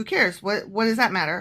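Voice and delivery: ordinary talk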